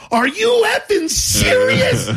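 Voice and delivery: furious, angry yell pitched way up. Telling a story about a woman's confession, retelling own yell. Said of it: "And then I just yelled out".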